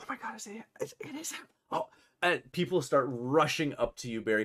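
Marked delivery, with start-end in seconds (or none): 0.0-1.9 hushed, whispering voice. Voicing a crowd of people in a scene: whispering in character.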